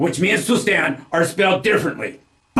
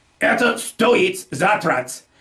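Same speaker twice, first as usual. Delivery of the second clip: stoit, first syllable stressed, said slowly. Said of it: "Placing the stress on the first syllable of the word for to cost".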